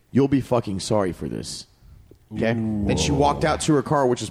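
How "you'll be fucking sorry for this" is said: menacing, low, sinister demon-like voice. Speaker retells a girl's parting words on her way to her car: retelling in a sinister voice. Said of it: "in the most sinister voice".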